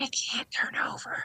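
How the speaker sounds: hushed, very quiet, breathy, barely-there whisper. Retelling how the husband whispered for help at night: imitating a whisper. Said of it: "he would whisper to me".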